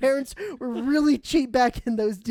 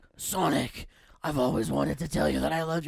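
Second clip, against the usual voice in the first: deep, rough, low voice; 9 semitones lower, 5 dB quieter than usual. Voicing Shadow confessing love to Sonic in a skit: Batman voice. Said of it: "I don't know why I sound like Batman".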